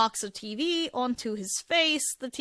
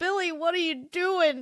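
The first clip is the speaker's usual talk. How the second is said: put-on slurred woozy voice, higher; 7 semitones higher than usual. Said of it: "The way that he slurs it perfectly".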